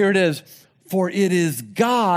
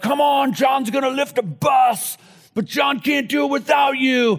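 pumped, pitched-up crowd-hyping hype announcer voice; 5 semitones higher than usual. Speaker recalling 90s power-team shows, mimicking the announcer hyping the crowd: imitating a hype announcer. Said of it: "an announcer that would just try to hype the crowd up".

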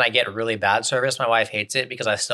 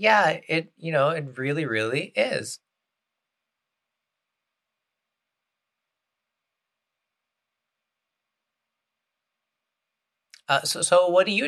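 put-on higher-pitched girl's voice; 6 semitones higher than usual. Demonstrating a small-talk exchange, voicing the woman's reply, imitating a girl's voice. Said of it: "that was the girl's voice".

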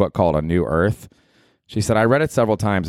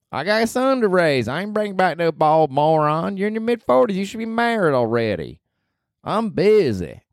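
put-on voice with higher pitch; 10 semitones higher than usual. Imitating a friend from Nashville who sets terms for a visit: imitating a friend from Nashville. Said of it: "She lives down there in Nashville, Tennessee".

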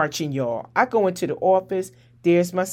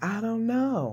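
soft, barely-there, hushed near half-whisper; 4 semitones higher, 7 dB quieter than usual. Recounting her answer when asked where the phone went; imitating a near-half-whisper. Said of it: "She's almost whispering like".

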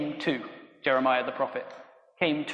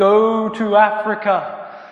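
overdone, booming, heavenly voice; 6 semitones higher, 10 dB louder than usual. Retelling how a 13-year-old heard a voice from heaven, over-exaggerated voice of God. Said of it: "God speaking in a very over-exaggerated way".

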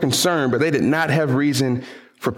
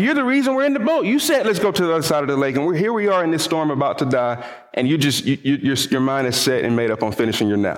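plain

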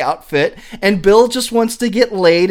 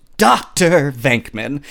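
put-on disdainful tone, much lower pitch; 6 semitones lower than usual. Retelling a movie scene, imitating a dean's distaste. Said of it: "he says doctor like he can't stand to have to call this guy a doctor".

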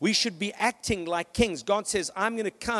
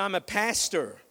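over-the-top, laid-on, exaggerated American accent. Retelling answering the young lady seated beside him on a flight, strongest American accent. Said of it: "In my most American accent that I could find".

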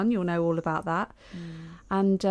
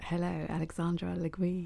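soft, husky, sultry, sexy voice; 7 dB quieter than usual. Co-host greeting the other co-host at the show's start, husky sexy voice. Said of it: "Ooh, nice, husky".

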